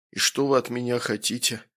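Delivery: ordinary delivery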